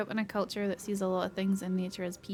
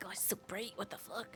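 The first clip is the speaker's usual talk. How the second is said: soft whisper, hissed under the breath; 14 dB quieter than usual. Retelling what one says to the bright sun: imitating hissing at the sun. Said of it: "I hiss at it every time".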